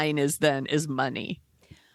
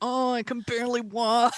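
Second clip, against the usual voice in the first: put-on high, feeble, frail old-man voice; 6 semitones higher than usual. Contrasting jail workout footage with the court entrance: Harvey Weinstein faking feebleness. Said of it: "he's like going into the court and he's like".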